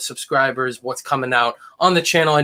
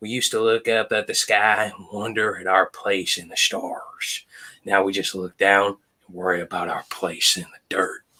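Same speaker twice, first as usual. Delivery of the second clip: very low, deep, hushed man's voice; 7 semitones lower, 5 dB quieter than usual. Quoting a line from Cooper, Matthew McConaughey impression. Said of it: "I got to do an impression of him".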